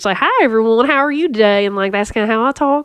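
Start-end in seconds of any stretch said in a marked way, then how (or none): 0.2-1.7 put-on sweet Appalachian grandma voice. Speaker demonstrates a grandma character voice from a high school play: Mima voice. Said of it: "that's where I got the voice".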